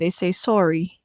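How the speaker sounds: put-on mimicked Canadian accent on "sorry". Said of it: "Like that".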